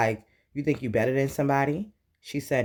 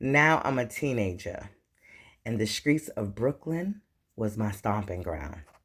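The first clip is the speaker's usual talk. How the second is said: ordinary talk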